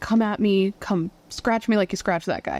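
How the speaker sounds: ordinary talk, nothing marked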